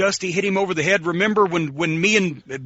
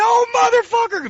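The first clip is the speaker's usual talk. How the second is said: play-acted, very high, sobbing, wailing crying scream; 4 dB louder than usual. Retell how he bent over once the back door closed, imitating Bubba's high-pitched crying scream. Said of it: "Bubba had a high-pitched voice".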